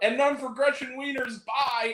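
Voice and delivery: high, loud, called-out yell. Retelling yelling out a line as the candy deliverer left the theater: retelling own yell. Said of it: "and then I yelled out".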